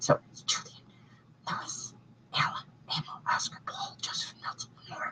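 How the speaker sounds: soft, breathy whisper. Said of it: "I can't say them so people can hear".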